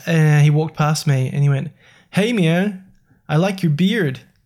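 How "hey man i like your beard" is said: put-on Ontario Canadian accent. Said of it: "is that your Canadian accent?".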